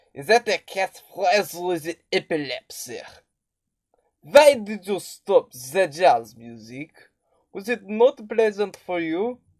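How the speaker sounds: put-on comic, funny French accent. Quoting lines from the movie: Sacha Baron Cohen French accent. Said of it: "he has a pretty funny French accent".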